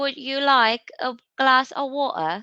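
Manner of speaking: British English accent attempt. Asked how water sounds in British English, the speaker does a British accent. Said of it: "I'm speaking British for you".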